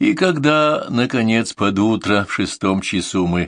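ordinary delivery, nothing marked

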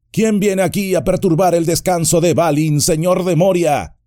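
booming, high-pitched shout. A narrator reads Gandalf crying out in Moria, stentorian shout. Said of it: "gritó con una voz estentórea".

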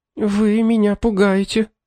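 faint, weak, quavering, trembling, high voice. Angelina responds to talk of possible motives, in a weak, trembling voice. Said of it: "слабым дрожащим голосом произнесла Анжелина".

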